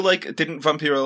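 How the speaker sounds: usual speaking voice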